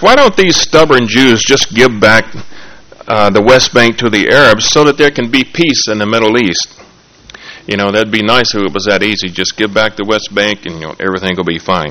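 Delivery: ordinary talk, nothing marked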